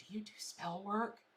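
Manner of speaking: quiet whisper, under the breath. A psychic retells a caller asking about spells, imitating a whispering caller. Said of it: "they're whispering in their phone".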